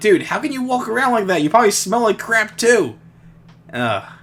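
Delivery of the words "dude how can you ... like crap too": put-on very high-pitched, impassioned, passionate outburst. Retelling a reaction while watching Pigpen: retelling a passionate rant. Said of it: "I got really passionate".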